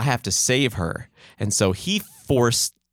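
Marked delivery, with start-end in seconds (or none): none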